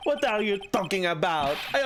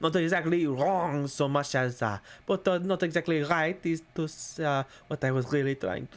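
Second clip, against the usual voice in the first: fake French accent, lower pitch; 5 semitones lower than usual. Voicing a game character's lines aloud: put-on french accent. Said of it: "I have to get back into the French".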